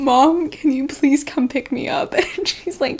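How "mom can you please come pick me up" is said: mock tearful, high, loud plea through sobs. Retelling a call to mom after collapsing in pain: imitating own sobbing. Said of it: "I'm like sobbing".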